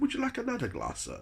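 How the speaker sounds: high, quick posh waiter voice. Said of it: "he talked quite posh".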